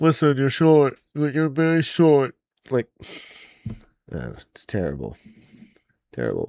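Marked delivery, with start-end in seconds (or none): 0.0-2.4 put-on plugged-nose voice, higher. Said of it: "sounds like his nose is plugged".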